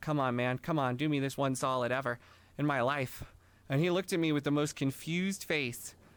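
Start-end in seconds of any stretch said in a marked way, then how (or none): 0.0-3.2 put-on earnest pleading tone. Retelling a silent plea to a teacher for backup: imitating an earnest plea. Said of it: "as earnestly as I could".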